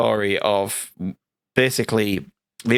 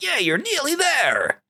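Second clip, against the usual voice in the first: little, tiny American voice, very high pitched. Describing flowers that chat to you through a game level, in a little American voice. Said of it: "this little American voice going".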